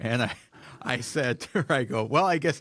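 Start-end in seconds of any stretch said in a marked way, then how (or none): none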